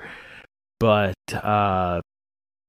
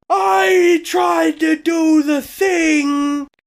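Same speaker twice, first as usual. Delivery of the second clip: high, loud freak-out yell. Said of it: "didn't mean to freak out there".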